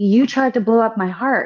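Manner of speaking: put-on, dead serious tone. Retelling what Susan said on being introduced: imitating Susan, in all seriousness. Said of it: "she looked at me in all seriousness".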